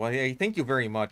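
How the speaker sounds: put-on Minnesotan accent. Speaker thanking a viewer after praise for an accent, Minnesotan accent. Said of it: "I take a lot of pride in my accents".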